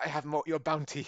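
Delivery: put-on French accent. Retelling a scene where Patrick Stewart plays a bounty hunter: imitating his French accent. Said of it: "and he was being French".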